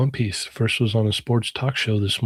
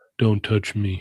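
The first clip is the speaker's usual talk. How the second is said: put-on, extremely deep voice. Acting out a lookalike stranger turning around: imitating the deepest voice ever. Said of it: "He says the deepest voice ever".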